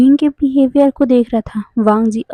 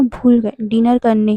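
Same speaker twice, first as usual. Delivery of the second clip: plain reading voice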